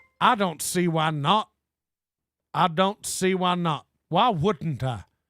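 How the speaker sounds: put-on Southern accent. A co-host asks him to talk in a Southern accent for the rest of the show; Southern accent. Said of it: "Can you talk in a Southern accent the rest of the show?".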